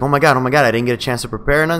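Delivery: ordinary delivery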